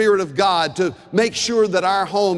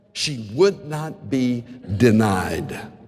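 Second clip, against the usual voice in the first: ordinary talk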